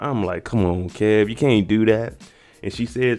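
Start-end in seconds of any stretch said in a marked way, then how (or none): none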